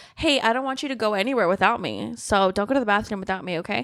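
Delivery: ordinary talk, nothing marked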